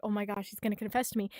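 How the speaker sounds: acted nervous voice. Retelling a story scene where a girl waits at the tree, Nene's put-on nervous voice. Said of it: "she's so nervous".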